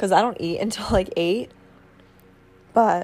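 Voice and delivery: voice cracking and breaking. Speaker chatting to viewers about their daily routine, voice cracking. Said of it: "my voice just cracked".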